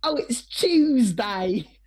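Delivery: high-pitched British accent, showing it off. Showing off good phrases for doing a British accent: British accent. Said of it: "a really good one to show off like the British accent".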